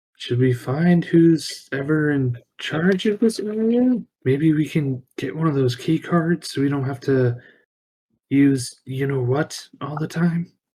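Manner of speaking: whispering in character. Whispering in character to a fellow party member about key cards: whispering in character. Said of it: "kinda whisper to Saban".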